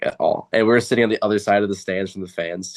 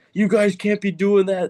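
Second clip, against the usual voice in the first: very high, angry, scolding high-pitched scream; 12 semitones higher than usual. Recounting how a boy's dad screamed at all the kids, retelling a dad's scream. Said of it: "He's screaming at all of us".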